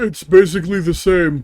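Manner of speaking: high, loud, put-on Broadway-style cartoon gargoyle voice. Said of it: "I could do the voice of Broadway".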